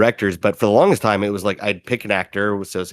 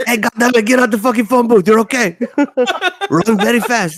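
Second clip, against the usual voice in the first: put-on foreign dad voice, very high and loud; 5 dB louder than usual. Imitating a dad shouting at someone to leave a phone booth: imitating a foreign dad. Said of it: "it makes it a lot easier to do that voice".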